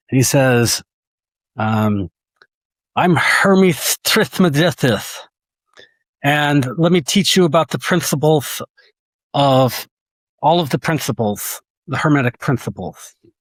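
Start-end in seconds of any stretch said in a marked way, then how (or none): 2.9-13.1 put-on lisping voice. Imagining a dream avatar offering to teach the speaker, Mike Tyson-style lisp. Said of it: "like Mike Tyson or somebody with a lisp".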